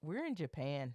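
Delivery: put-on deadpan delivery. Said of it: "Just deadpan".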